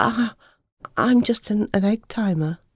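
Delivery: stammering, slow. Narrator reading Eva's reply after she is praised for saving them, stuttering. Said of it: "Eva stuttered".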